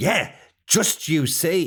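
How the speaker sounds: put-on Irish accent. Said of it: "I'm about to do an impression of him".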